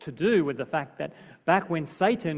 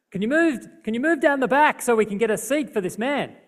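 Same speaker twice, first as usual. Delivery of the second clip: loud call, much higher; 8 semitones higher, 6 dB louder than usual. Retelling how the bus driver asked passengers to move back, retelling the driver's loud voice. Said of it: "he spoke in a loud voice".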